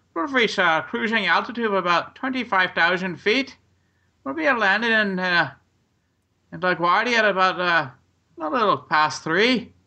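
put-on Irish accent in cabin-announcer style. Imitating flight attendants after time in Ireland: imitating an Irish flight attendant accent. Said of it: "your accent".

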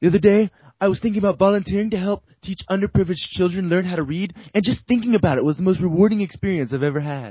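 high, rushed film-character voice. Quoting a line from Zoolander to the others: Derek Zoolander impression. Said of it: "your impressions are so spot on".

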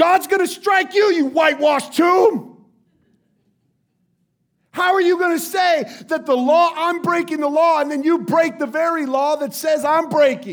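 loud, high, furious yell in righteous anger. The speaker acts out Paul yelling at those who struck him: retelling an angry yell. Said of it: "Paul yells out".

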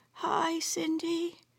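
feeble, very hushed, weak, high-pitched voice. A grandmother in hospital after a stroke greets her grandchild on the phone: weakly. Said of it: "she said weakly".

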